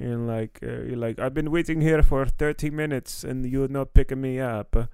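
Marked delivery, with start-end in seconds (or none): 1.2-4.8 put-on Arabic accent. Retelling a french girl's complaint about not being picked up at the airport, arabic accent. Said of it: "You just gave her like an Arabic accent".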